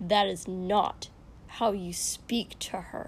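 sharp, cutting tone. At a meal, a man rebukes his companion over how he spoke to a servant; sharp. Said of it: "Kosuke said sharply".

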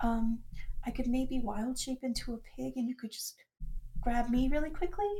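very soft, hushed half-whisper. Gris leans into Leon so only she can hear, half-whispering. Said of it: "kind of like whispers so that only she can hear".

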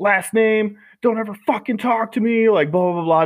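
acted drill-sergeant scream. Retelling how the drill sergeant got in their face: imitating a drill sergeant screaming. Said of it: "screaming at me".

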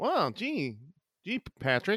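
high, swooping, drawn-out cartoon voice. Acting out a Bikini Bottom scene, answering Patrick: SpongeBob voice. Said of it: "my SpongeBob impression sounds like Dave".

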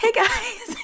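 very high, chirpy, totally oblivious voice. Retelling how Terry walks in with him: imitating Terry. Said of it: "And she just like".

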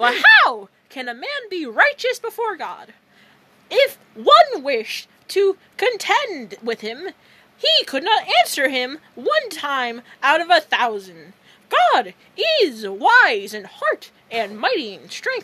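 very loud cartoon mouse voice, swooping in pitch. Reading a random Bible passage aloud, in the Mickey Mouse voice. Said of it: "read in the Mickey Mouse voice".

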